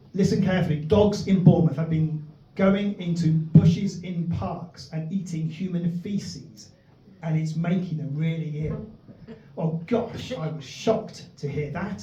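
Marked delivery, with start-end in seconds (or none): none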